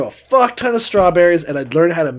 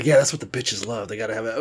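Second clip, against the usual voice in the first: deep, low put-on voice, dropped way down; 6 semitones lower, 6 dB quieter than usual.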